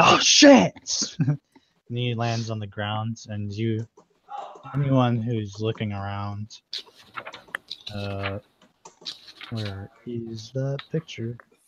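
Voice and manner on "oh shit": high, loud, startled yelp. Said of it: "he's like".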